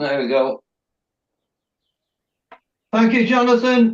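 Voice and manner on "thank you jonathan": loud, rising shout, as if calling far off. Thanking Jonathan, who is in Yorkshire: shouting. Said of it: "I'm shouting because he's in Yorkshire".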